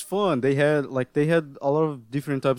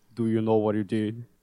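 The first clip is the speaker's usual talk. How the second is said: put-on grumpy old man voice, pitched lower; 4 semitones lower than usual. Retelling a police scene from a first episode: imitating Norio Wakamoto. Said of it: "with his voice, it's just hilarious".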